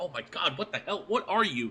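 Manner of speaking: high, gushing, amazed, excited geeking out. Voicing a dwarf kid who geeks out over a construct's parts: geeking out excitedly. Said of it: "He starts geeking out".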